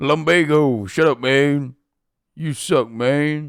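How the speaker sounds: Wild West gunslinger cowboy voice. Speaker keeps going with his Red Dead 2 impression. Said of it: "that's my impression of uh of Red Dead two".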